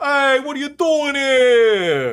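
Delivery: very loud, high New York or South Boston dragon voice. Trying out a voice for a dragon character, attempted South Boston dragon voice. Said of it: "What about a South Boston dragon?".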